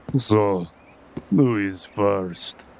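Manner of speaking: low, deep-pitched voice. A captor calls out to the captive group, in a deep captor voice. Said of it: "you hear the deep voice of your captor ask".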